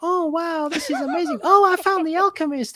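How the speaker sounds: squeaked out at very high pitch. Imagining Santiago from the novel in a Mickey Mouse voice. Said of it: "Mickey Mouse voice the whole way through the novel. I hear Santiago in that voice".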